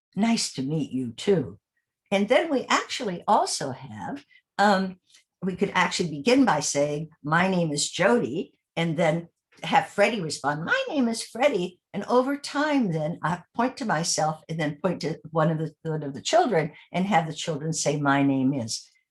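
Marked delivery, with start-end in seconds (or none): 10.7-11.8 high-pitched put-on character voice. Showing how to begin with children, the speaker answers as Freddie in a high-pitched Freddie voice. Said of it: "Freddie just has kind of a high pitched voice".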